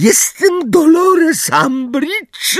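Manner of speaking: very high, shrill, terrified squealing. Answering an approaching centaur who demands to know who they are, in a shrill, terrified voice. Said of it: "odpowiedziała Umbridge piskliwym, przerażonym głosem".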